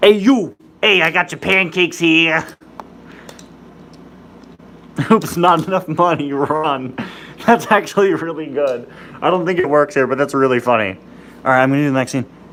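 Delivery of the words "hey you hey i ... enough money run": put-on slow, drawn-out Jersey accent. Voicing a scene, the speaker gives Mary Escobar a Jersey accent. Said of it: "I want Mary Escobar to have a Jersey accent".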